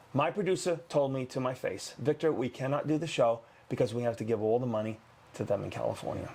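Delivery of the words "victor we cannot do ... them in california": ordinary talk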